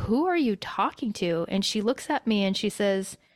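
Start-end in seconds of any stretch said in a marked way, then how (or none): none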